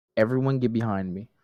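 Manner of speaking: half-whispered, hushed. Speaker in a role-play half-whispering to the group, half-whispering. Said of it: "I'm gonna whisper to the group".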